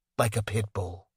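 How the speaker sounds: dropped to a low, hushed voice. A woman talking with the narrator finishes her sentence in a lowered voice. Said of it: "She lowers her voice".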